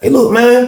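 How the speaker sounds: scared, slow, halting speech. Retelling questioning a new cellmate about a stolen book: imitating own scared slow talk. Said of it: "I'm talking slow 'cause I'm scared".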